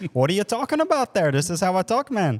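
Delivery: joking put-on Canadian accent. Retelling a friend's reply after being told to drop the accent, in a canadian accent. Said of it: "spoke in a Canadian accent".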